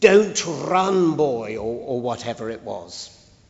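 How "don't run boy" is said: mock, great loud booming shout. Recalling school rules, the speaker imitates someone shouting at a running pupil: imitating a great loud shout. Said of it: "with a great loud voice".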